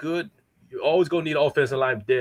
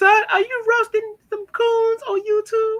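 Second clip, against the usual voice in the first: very high-pitched voice; 4 dB louder than usual. Joking to Mace about his mother calling from the back, do a Mama Mace voice. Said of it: "I can hear Mama Mace from the back saying".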